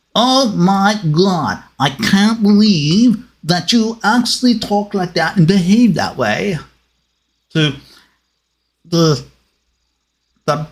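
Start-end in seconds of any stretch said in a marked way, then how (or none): 0.2-6.6 high, haughty, snooty upper-crust snob voice. Showing the voices done for highfalutin characters, put-on snooty highfalutin voice. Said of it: "highfalutin people who always had to stick their nose in the air".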